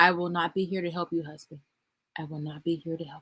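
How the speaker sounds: saying it quietly. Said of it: "just say that quietly every day".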